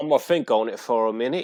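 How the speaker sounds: put-on English accent. Mocking an accent the speaker says they hate: mock english accent. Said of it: "talk about the English accent".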